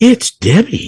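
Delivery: very high, sugary, overly pleasant mocking lilt. Imitating a voice heard on a recording: imitating an overly pleasant mocking voice. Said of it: "It's like being too pleasant".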